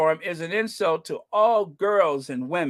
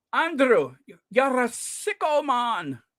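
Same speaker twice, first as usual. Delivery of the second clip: put-on Scottish accent, rolled r's, higher pitch; 6 semitones higher than usual. Quoting what a man in scotland said to him, imitating a scottish accent. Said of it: "hard for me to roll those R's".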